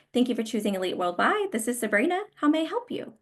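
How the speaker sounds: upbeat, welcoming, friendly voice with rising pitch. Demonstrating how to greet a caller with your name: friendly and upbeat. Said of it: "I sound friendly. I'm, I'm upbeat".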